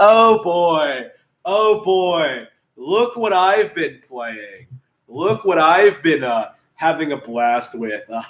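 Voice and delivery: most sardonic, heavily sarcastic tone imaginable. Podcaster talking about the game he's been playing: sarcastic, sardonic voice. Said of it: "used in the most sarcastic, sardonic voice imaginable".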